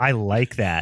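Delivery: mock smirking delivery. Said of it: "And he's just grinning".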